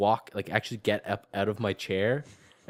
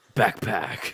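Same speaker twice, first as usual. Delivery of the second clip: gruff angry racer voice, lower; 3 semitones lower than usual. Saying random words as a joke: Need for Speed driver voice. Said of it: "driver guy's voice from Need for Speed".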